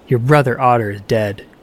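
plain

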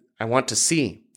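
ordinary delivery

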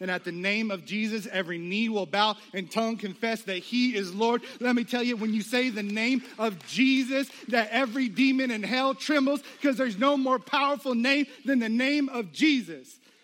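hyped-up sermon voice. Speaker telling a listener about the name of Jesus: getting hyper, excited. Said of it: "I'm getting a little hyper in here".

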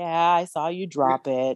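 slow, glum, resigned, gloomy mopiness. Retelling a father's weary reply to his daughter: gloomy Eeyore-like voice. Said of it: "He's like Eeyore".

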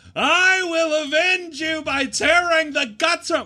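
very high, piercing, full scream. Retelling what you screamed at your fallen friend, retelling a scream. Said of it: "and I'm screaming".

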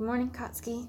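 soft, drowsy, sleepy, just-woken murmur. Reading a story aloud, she greets him as she wakes: soft, sleepy voice. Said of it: "she said in a soft, sleepy voice".

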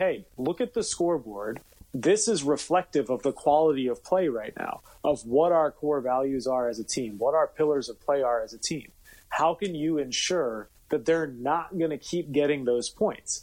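ordinary delivery

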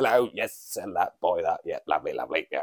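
put-on English businessman accent, business-type chatter. Comparing how businessmen sound, the speaker imitates an english one: english businessman impression. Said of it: "you hear an English businessman".

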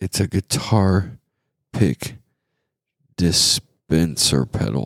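deliberate, slow, halting, word-by-word delivery. Describing a product photo to listeners, saying the product's name slowly. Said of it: "I said that slow".

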